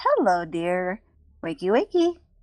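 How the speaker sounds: playful, amused, teasing tone. Voicing a character who grins at a waking captive: grinning while speaking. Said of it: "Just, just grins. She goes".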